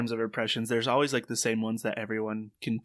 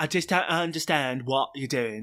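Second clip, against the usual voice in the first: southern English accent, Essex-leaning; 3 semitones higher than usual. Discussing English accents Americans know, a line in an Essex-like English accent. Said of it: "closer to Essex".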